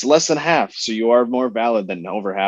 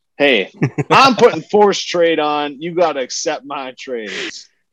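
put-on American Southern accent; 4 semitones higher than usual. Joking with friends about forcing trades on the other GMs, in a Southern accent. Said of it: "Where'd that Southern accent come in from".

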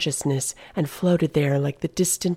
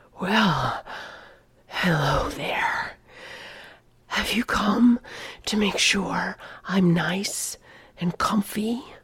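goading whisper full of mockery; 4 semitones higher than usual. A sedated prisoner greets the visitor who has come to check on him, provoking him. Whispering, taunting. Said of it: "the shadow, heard the night's noises. ... "I can hear your heartbeat," he whispered, and his voice penetrated Nathan's clothing, burrowing into his pores".

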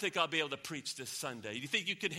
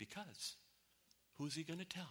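utterly calm, very quiet voice; 14 dB quieter than usual. Telling a joke, acting out God's answer to the angel, retelling a very calm reply. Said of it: "And God very calmly says".

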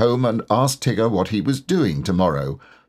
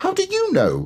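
very high, affronted, indignant tone. One who wasn't supposed to be listening questions the speaker, indignantly. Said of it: "asked Roo indignantly".

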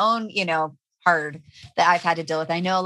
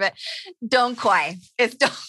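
words breaking up with laughter throughout; 5 semitones higher than usual. Correcting the plant's name to another speaker, laughing while talking. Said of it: "I can't even talk 'cause I'm laughing".

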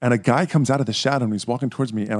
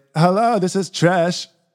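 put-on bad girly voice, high and slow; 7 semitones higher, 3 dB louder than usual. Retelling calling his blind date, who answers the phone: bad impression of Trish. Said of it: "You have the worst impersonation".

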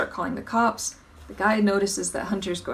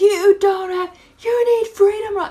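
mock shrill, very high, very loud flipped-out yelling; 13 semitones higher, 10 dB louder than usual. Retelling a customer's demand for Freedom Rock: imitating a man flipping out. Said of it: "He just, like, flipped out".

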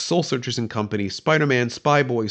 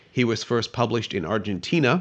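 ordinary talk

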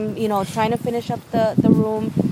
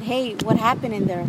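normal talking voice

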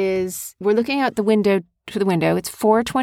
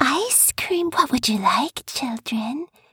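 sinister, creepy, coaxing, luring villain voice; 4 semitones higher, 4 dB quieter than usual. Imitating the creepy character from the movie who lures children. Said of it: "He was creepy".

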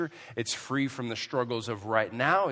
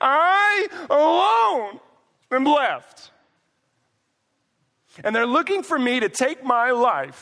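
sulky pout, very high and very loud; 14 semitones higher, 10 dB louder than usual. Reading his reply aloud to the listeners, as asked, in a mock-pouting voice. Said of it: "read this in your most pouting voice".

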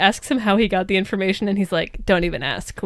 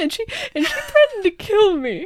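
put-on crying voice, much higher; 13 semitones higher than usual. Recapping an episode, speaker imagines what Spender says, imitating Spender crying. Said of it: "He's like crying".

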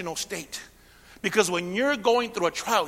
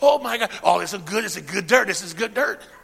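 put-on excitement, faster pace; 6 dB louder than usual. Acting out a miner who finds a nugget of gold, mock-excited. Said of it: "He's jumping up and down".

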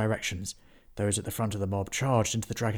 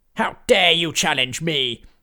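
booming, very loud, high necromancer villain roar; 7 semitones higher, 9 dB louder than usual. Narrating a story, the necromancer answers Henry's challenge: roaring necromancer. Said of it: "And there stood a man. He wore a helmet with pointed horns that grew from either side and met in the middle. A purple cloak hung low from his shoulders, and a skull was emblazoned upon his chest".

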